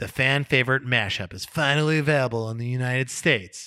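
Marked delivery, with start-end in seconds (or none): none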